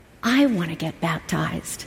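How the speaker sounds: sweet, earnest voice, pitched low. Retelling a son asking to be baptized: imitating Max's sweet voice. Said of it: "in that sweet voice".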